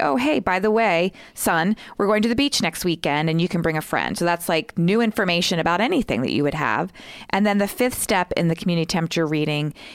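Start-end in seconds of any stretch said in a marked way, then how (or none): none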